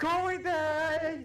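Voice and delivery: high, loud, drawn-out screaming.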